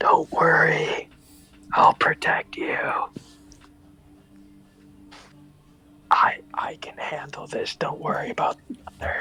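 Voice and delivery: speaking in a whisper. Playing a character, looking down at short companions, whispering to the merchant. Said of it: "whisper to the merchant".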